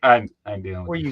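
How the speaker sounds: put-on dog voice musing to itself. Retelling how the dog walked in and left: voicing the dog's thoughts. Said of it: "And just, like, left, like".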